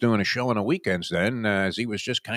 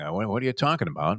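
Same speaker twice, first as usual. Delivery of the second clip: usual speaking voice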